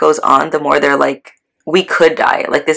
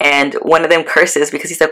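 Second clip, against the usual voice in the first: ordinary talk, nothing marked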